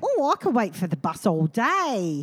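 silly put-on English accent, day drawn out. Retelling a bit the audience loved, the speaker does a silly English accent. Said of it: "we were doing English accents".

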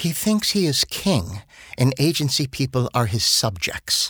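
put-on speaking with an English British accent. Quoting the account director on what the new client is like, in a British accent. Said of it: "in her British accent".

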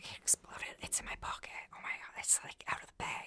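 mimicked mumbled whisper. Retelling what a friend whispered while getting ready to go home: retelling a friend's mumbled whisper. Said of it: "my friend whispers to me".

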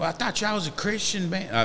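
high mock Southern accent. Speaker quoting a Facebook commenter about the new album, in a Southern accent. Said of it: "I just made that accent like it surely had to be somebody talking like that".

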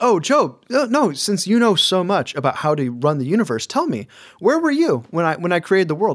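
high sarcastic sing-song. Retelling God's reply to Job's questions: sarcastic God voice. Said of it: "I love sarcasm".

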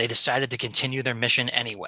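ordinary delivery

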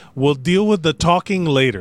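plain

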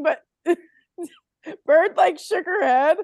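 talking through laughter. Apologizing for laughing while telling what someone did: laughing while talking. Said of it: "I'm so sorry that I'm laughing".

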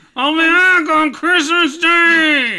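loud squeal, stretching out Day. Saying goodbye as the visiting snowman: Frosty the Snowman voice. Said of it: "Frosty the Snowman".

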